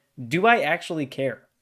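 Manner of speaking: normal talking voice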